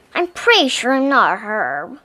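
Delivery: plain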